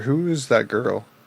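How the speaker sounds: curious, private aside. Asking a priestess about a girl, under the breath. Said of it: "Under my breath".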